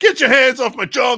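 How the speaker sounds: put-on very loud, high-pitched yell in Alabama accent. Quoting a movie character from Idiocracy: imitating Bubba, Alabama accent. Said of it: "it's like the accent exactly".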